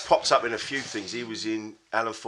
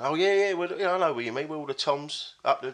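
chatty, matey geezer banter, pitched up; 6 semitones higher than usual. Retelling a sketch where a priest chats away: Alan Ford chatting like a geezer. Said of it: "chatting away like this geezer".

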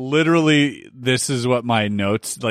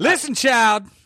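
very high, sassy put-on woman voice; 11 semitones higher than usual.

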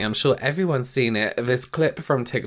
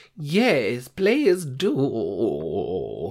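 put-on old woman voice, sing-song. Answering a co-host who wants to try the product: old woman voice. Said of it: "That's my old woman voice".

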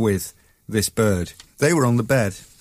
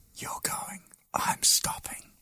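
very quiet, hushed, breathy whisper. Retelling hiding behind a curtain with Grayson: retelling a whisper. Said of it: "I whispered to Grayson".

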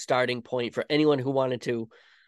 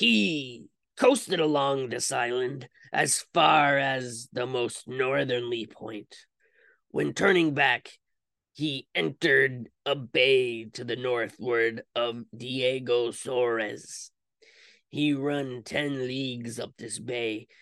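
put-on pirate voice. Reading another quote aloud to listeners in a put-on pirate voice. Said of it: "I'm going to read in a pirate voice".

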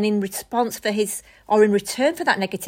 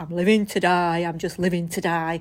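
put-on Bury accent; 4 semitones lower than usual. Retelling phone calls, imitating his dad's reply, in a Bury accent. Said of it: "with a Bury accent".

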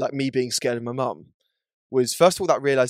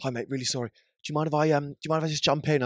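acted distressed man voice; 2 semitones higher, 4 dB quieter than usual. Retelling an encounter at a queue, quoting a man who asked to cut in, imitating a distressed man. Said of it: "He looked really distressed".

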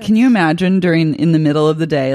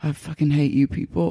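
mock under-the-breath mutter, quieter; 6 dB quieter than usual. Retelling the moment that made you laugh out loud, imitating James muttering under his breath. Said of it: "James just under his breath, he just goes".

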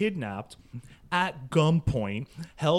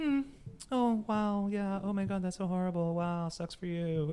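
put-on bored tone, higher and quieter; 4 semitones higher, 6 dB quieter than usual. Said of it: "And she's like".

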